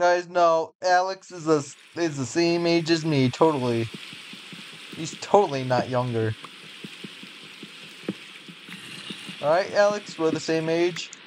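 dripping sarcasm, played straight, insistent. Telling the others another player is the same age: sarcastic. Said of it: "you're saying it so sarcastically".

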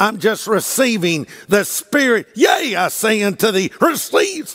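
weird TV preacher-style sermon cadence. Speaker mocks how a preacher on television talks: mocking tv preacher voice. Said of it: "he usually talks like this".

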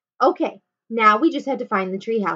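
ordinary delivery, nothing marked

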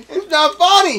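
very high, very loud speech through laughter. Denying that a joke is funny to friends: laughing while talking. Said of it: "Why are you laughing at that".

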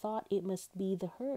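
ordinary delivery

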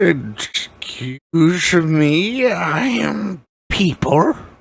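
tiny, high cat voice, very slow. A player asks the cat-folk shopkeeper about cat folk; tiny cat-person shopkeeper voice. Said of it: "And then this teeny tiny little is like foot and a half tall cat person thing walks up".

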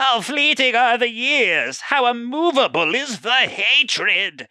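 very high-pitched, villainous cartoon voice. Player reads a game villain's mission line aloud: Skeletor impression. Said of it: "trying to do my best Jason as like Skeletor impression".

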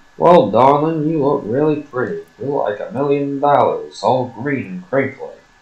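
put-on old-fashioned, fifties-style charming, sweet-talking delivery. Mocking how the game's characters talk, like in the fifties: mock fifties-style flattery. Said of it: "like they do in, like, the fifties".

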